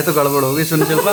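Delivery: ordinary delivery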